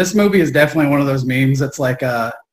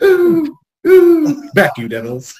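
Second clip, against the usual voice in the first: high-pitched, swooping, drawn-out whimpering werewolf voice; 14 semitones higher than usual. Redoing the werewolf whimper when asked to add Vincent Price: Vincent Price voice. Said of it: "add that to the impression".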